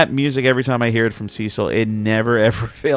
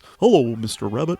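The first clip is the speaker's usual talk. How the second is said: dopey, dim, dozy cartoon voice, badly done. Ranking old cartoons, the speaker quotes the turtle's line: dopey Cecil Turtle voice. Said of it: "hilariously voiced with a really dopey voice".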